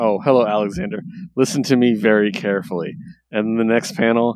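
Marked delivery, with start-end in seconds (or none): none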